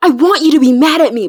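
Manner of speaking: loud, yelled voice. Retelling a fan fiction scene where a character yells: imitating a character yelling. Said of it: "but he's yelling at me".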